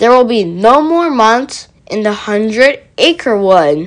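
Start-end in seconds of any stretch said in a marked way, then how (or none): none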